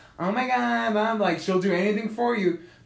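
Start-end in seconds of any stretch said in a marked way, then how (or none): 0.2-1.2 put-on sweet, high, sugary, gushing valley girl voice. Describing a girl who plays really sweet: imitating a valley girl voice. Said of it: "this valley girl kind of, like, persona where she's just like".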